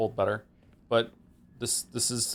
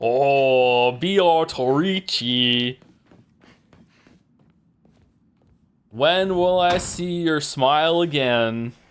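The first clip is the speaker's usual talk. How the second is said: terrible put-on American accent, loud and slow; 4 semitones higher, 8 dB louder than usual. Imagining out loud how a line would sound in the worst american accent. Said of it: "the worst American accent".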